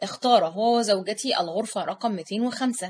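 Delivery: ordinary delivery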